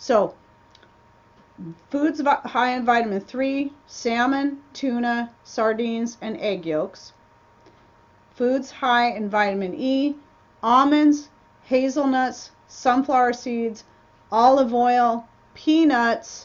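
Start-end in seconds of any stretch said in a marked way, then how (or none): 1.9-16.5 slow, unhurried, deliberate reading, item by item. Rereading a list of foods for viewers: reading slower. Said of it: "I'll read it slower this time".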